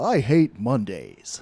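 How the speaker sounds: voice dropped right down, very deep. Doing The Rock as Garfield in a joke casting: The Rock impression. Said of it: "That's my Rock impression".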